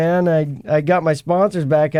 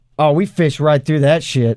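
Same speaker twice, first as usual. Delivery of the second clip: put-on old fisherman's way of speaking. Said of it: "I'm gonna say it like the great [name] says it".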